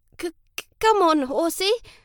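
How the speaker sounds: high, halting, stammering, stuttered pleading. Reading a story, a boy urges his horse on; stammering. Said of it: "Lancelot stammered".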